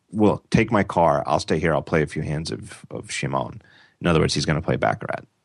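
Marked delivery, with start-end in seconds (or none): none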